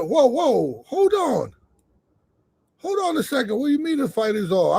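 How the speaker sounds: panicked, caught-off-guard tone. Recounting the commissioner calling off his fight, retelling his own panic. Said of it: "I'm now I'm panicking".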